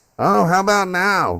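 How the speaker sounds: speaking up, very drawn out. Answering being told to speak up: speaking louder. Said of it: "you talk like that, [name], you'll get in every time".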